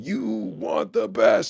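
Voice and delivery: growled, screaming voice. Retelling how a man opened every show on stage: imitating a growling scream. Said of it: "that growling scream".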